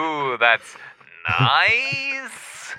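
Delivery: sarcastic, with nice swooping high.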